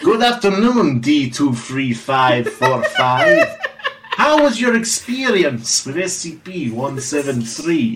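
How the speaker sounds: slowed cartoon villain voice. Playing Dr. Wunderstein and questioning D23545 in a roleplay, in a Gru accent. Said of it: "He's just doing a Gru accent".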